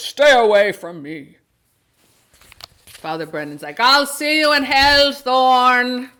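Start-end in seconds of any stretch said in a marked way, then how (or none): 0.0-1.4 booming, loud delivery. Retelling a film scene, quote the man confronting Father Brendan in a booming Gregory Peck voice. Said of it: "in that wonderful booming voice".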